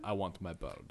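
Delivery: put-on big, burly Russian accent. Joking about a spelling with a speaker, saying the line in a big burly Russian accent. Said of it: "Think of it with a big, burly Russian accent".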